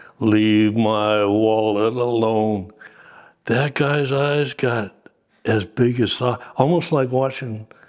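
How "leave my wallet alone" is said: deep-voiced man, slow and deliberate delivery. Retelling a story, quoting Rasmussen to a man digging around the aircraft's tail: Rasmussen's real deep voice. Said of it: "Rasmussen had a real deep voice".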